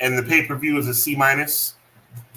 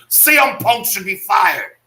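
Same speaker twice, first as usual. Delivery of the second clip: high, infuriated, fuming delivery; 6 semitones higher, 4 dB louder than usual. Reacting to a wrestling match: Wade Barrett voice. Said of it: "that's my Wade Barrett boy".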